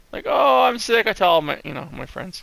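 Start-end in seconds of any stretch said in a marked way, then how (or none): 0.2-1.0 high-pitched, pitiful, whiny sick-sounding voice. Speaker, who is sick, mocks how they sound to themself: mock-whiny sick voice. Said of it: "to me I sound like a whiner".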